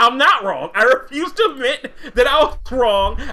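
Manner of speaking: offended, indignant voice.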